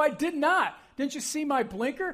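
acted-out yelling. Telling of a driver pulling out in front, the speaker re-enacts yelling out the window. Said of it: "I'm yelling at this guy out my window".

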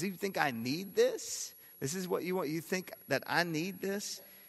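high-pitched, sarcastic disbelief. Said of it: "You can almost hear the sarcasm in God's voice".

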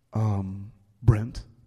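put-on very deep voice. Retelling what a teacher said to a fifth grader: imitating teacher's very deep voice. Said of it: "he had this very deep voice".

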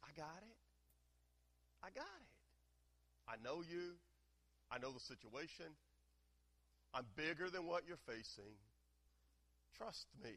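half-whispered, hushed voice. Acting out words half-whispered in the listener's ear, half-whispering. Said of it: "Jesus is whispering in your ear".

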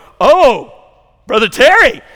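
loud, high-pitched excited cry.

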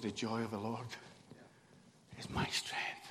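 soft, low, hushed voice full of joy.

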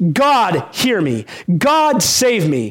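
put-on very slow, deliberate, commanding voice. Explaining a psalm, voicing the psalmist calling on god, acting out a commanding voice. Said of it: "in this commanding, imperative voice".

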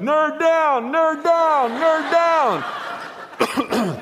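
very high, shrill, loud repeated yell. Telling a story about looking over a fence, imitating Pat yelling. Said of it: "Pat starts yelling".

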